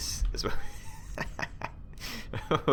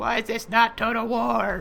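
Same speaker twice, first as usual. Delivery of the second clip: very high, drawn-out sarcastic voice; 12 semitones higher, 4 dB louder than usual. Introducing a new video, the speaker voices a non-watching viewer, sarcastically imitating them. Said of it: "you probably don't sound like that. I'm being a little bit sarcastic".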